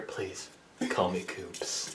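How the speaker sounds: very quiet, slow, breathy whisper in the ear. Imitating someone whispering in a listener's ear: Cooper whispering in your ear. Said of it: "Whispers in your ear".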